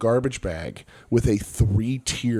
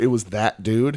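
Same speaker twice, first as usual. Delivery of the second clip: ordinary delivery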